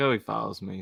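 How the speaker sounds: normal talking voice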